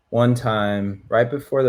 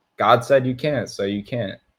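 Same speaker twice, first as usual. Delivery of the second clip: mock breezy, unbothered, nonchalant, offhand delivery. Retelling a church brother's ruling on keeping Passover: imitating a nonchalant tone. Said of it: "But he said it so nonchalant".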